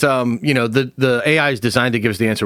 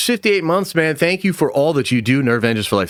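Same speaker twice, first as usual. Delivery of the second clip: plain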